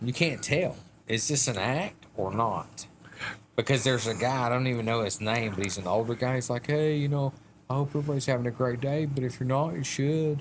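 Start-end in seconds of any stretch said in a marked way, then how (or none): 6.7-10.4 put-on calm hippie voice, quieter. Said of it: "he talks real calm".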